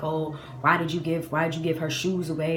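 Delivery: ordinary delivery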